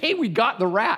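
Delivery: acted, high-pitched screaming. Retelling calling out to the daughter about the trapped rat, retelling a scream. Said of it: "I was screaming".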